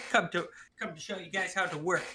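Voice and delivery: ordinary talk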